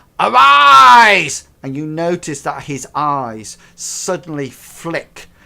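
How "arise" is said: huge, booming, very loud, drawn-out, rough roar. Narrating turn three, the speaker voices Jeremiah confronting the players: Jeremiah's huge shout. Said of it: "he shouts out in a huge voice".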